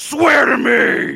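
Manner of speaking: very loud, rough, scary rasping voice. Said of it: "because he's trying to be scary".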